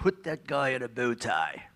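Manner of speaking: unhurried, slow, deliberate commanding voice. Retelling what the head of Fox Sports said, an Australian: David Hill impression. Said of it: "excellent David Hill impression".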